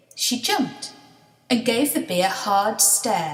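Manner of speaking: plain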